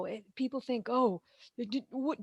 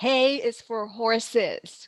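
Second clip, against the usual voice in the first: loud, exasperated, very annoyed, dragged out very slowly; 7 dB louder than usual. Quoting what a grandmother always said: imitating a very annoyed voice. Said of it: "in a very annoyed voice".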